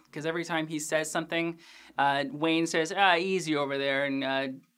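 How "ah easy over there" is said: usual speaking voice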